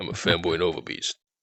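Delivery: playful, deep, goofy put-on bro voice, hammed up. Answering a request to do the voice again: Gimbro voice. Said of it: "fooling around with the Gimbro voice".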